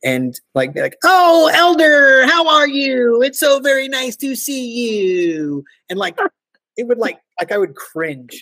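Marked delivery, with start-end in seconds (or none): 1.0-5.6 put-on loud American voice, much higher, slower. Speaker recalls freshly arrived Americans in Edinburgh, imitating a loud American. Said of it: "how loud we are".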